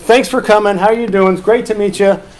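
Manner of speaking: big, hearty, welcoming, projected voice. Retelling how he greets kids who come in, retelling a loud greeting. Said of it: "loud voice".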